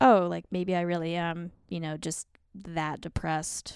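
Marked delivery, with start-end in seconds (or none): none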